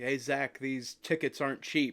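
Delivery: ordinary talk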